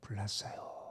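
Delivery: calm, hushed, quiet near-whisper. Showing how not to announce a fire, said quietly and calmly. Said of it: "조용하게 불났어요. 이렇게 할 거예요?".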